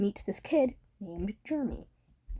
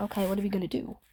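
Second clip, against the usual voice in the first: mock nonchalant, offhand tone. Retelling what a man said when asked to go outside, retelling a nonchalant reply. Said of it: "He just said in a nonchalant voice".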